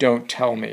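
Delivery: normal talking voice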